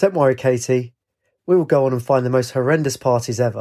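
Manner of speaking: ordinary delivery, nothing marked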